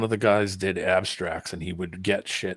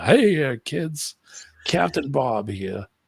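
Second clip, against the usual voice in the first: put-on slow, pitched-up kids' show voice; 7 semitones higher, 4 dB louder than usual. Retelling how the host greeted kids at the start: imitating Captain Bob. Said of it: "the guy would come out".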